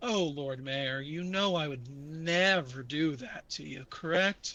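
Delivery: deep, low, reassuring creature voice. A narrator voices the one inside the box answering the Lord Mayor, deep and booming. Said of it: "A deep, booming voice from inside the box".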